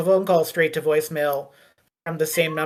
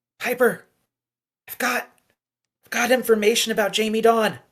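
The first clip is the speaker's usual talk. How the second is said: whispered voice; 6 semitones higher than usual. Playing back a whispered voicemail left for piper, whispering. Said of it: "it is like a whispered voicemail".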